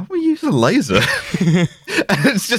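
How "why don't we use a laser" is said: deeply offended, indignant, affronted, pitched up. Retelling someone's reply after a threat to shoot, mock-affronted tone. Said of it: "in the most affronted tone".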